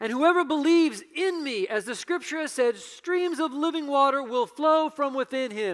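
loud, high, commanding declaiming voice.

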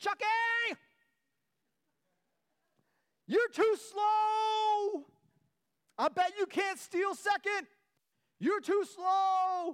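high, loud, drawn-out, jeering heckling yell. Retelling heckling an opposing player from first base seats, retelling a yelled taunt. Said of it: "I yelled at him".

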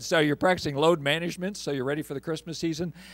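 dry, teasing, total sarcasm, acted out. Speaker retells what a man said to them; retelling a sarcastic remark. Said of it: "he sarcastically said".

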